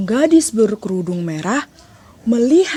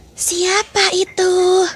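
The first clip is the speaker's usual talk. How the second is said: faked, put-on grandmother voice; 10 semitones higher than usual. The wolf answers the girl's knock, imitating the grandmother's voice. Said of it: "sambil menirukan suara nenek".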